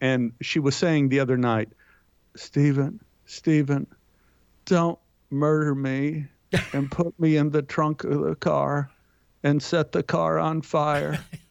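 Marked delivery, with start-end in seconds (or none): 2.3-11.2 put-on sleep-talking voice. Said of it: "talks in her sleep".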